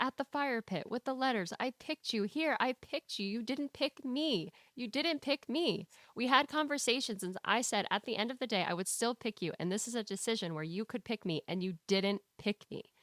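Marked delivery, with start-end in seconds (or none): none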